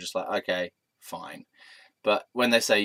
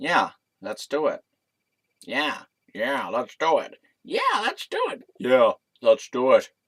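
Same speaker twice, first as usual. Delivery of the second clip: put-on, sing-song, animated American accent; 4 semitones higher than usual. Retelling how he answered the speaker's request for a kiss, american accent. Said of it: "In an American accent".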